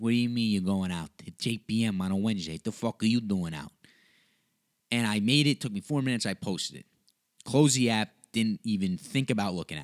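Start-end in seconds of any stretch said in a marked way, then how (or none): 0.0-3.7 put-on Italian-accented dad voice. Acting out the dad scolding the son for going out: Pasquale character voice. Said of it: "that's where the Pasquale character was born".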